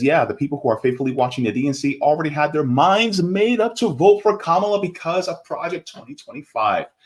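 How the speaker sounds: usual speaking voice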